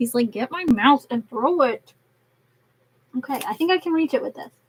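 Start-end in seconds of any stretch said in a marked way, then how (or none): 0.3-1.9 slow, bossy, fed-up, annoyed pet voice. Voicing the pet's thoughts as he gets annoyed: voicing an annoyed pet. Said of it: "he's getting annoyed with me".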